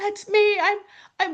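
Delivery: mock very high, pleading, begging tone. Retelling going up to the pastor after Bible study: retelling own pleading. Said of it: "basically s-, pleading with him".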